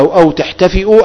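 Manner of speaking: usual speaking voice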